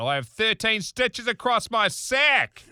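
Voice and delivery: escalating angry outburst. Retelling shouting at a man across campus: retelling own angry outburst, getting louder. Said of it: "getting progressively louder, I blew my nuts out".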